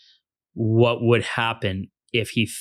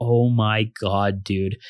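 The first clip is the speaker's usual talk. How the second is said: acted-out whisper. Retelling watching a climber while talking to Matt: retelling a whisper. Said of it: "I'm whispering to Matt".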